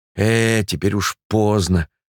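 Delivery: ordinary delivery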